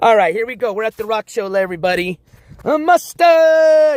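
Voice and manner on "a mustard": raised, loud, high holler. At a rock show, calling out to everybody there, yelling. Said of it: "Now I'm going to be yelling that all day long".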